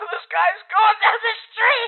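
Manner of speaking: very high, laughing and giggling through words. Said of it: "I can't catch my breath".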